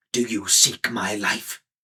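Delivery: spoken in a hiss. The wizard Mordor answers the Pig-keeper who seeks his life; hissed. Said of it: "hissed Mordor".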